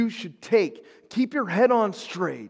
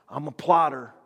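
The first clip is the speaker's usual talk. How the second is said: put-on proud, boastful tone; 5 semitones lower than usual. Retelling how his old man describes himself, retelling a proud boast. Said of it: "like he says proudly".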